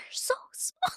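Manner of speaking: quiet, breathy, hushed whisper. Retelling what a client said at the shop door: imitating a whisper. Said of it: "she, like, whispered it".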